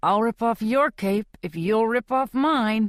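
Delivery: speaking through gritted, clenched teeth. Reading a man's reply to his companion, spoken through gritted teeth. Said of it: "he says through gritted teeth".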